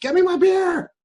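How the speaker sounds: very high, shrill, loud yell. Retelling serving beer while customers yelled orders: imitating customers yelling. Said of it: "there were still people yelling at me".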